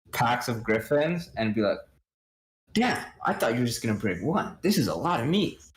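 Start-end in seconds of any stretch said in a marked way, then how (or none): 2.7-5.5 gushing, thrilled, fast, swooping, over-the-top delight. Voicing a customer who finds far more griffin meat than ordered: super excited NPC voice. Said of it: "super excitedly walk through".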